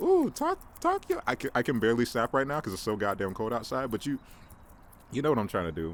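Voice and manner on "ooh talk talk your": very high, hyped cheer. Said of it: "like, we're at a poetry slam".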